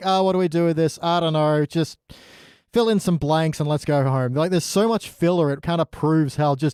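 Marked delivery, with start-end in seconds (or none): none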